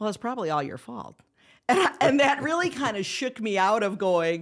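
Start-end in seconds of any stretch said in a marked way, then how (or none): 0.0-1.2 a little teasing, wry sarcasm. Retelling what the other speaker once said in the courthouse: imitating a slightly sarcastic remark. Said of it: "a little sarcastically looking at me and going".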